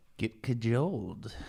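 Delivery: creepy, unsettling, deeply creepy character voice. Repeating a word as a joke, trying to be creepy: creepy Salad Fingers voice. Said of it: "you sounded like Salad Fingers".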